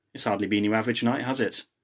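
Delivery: plain reading voice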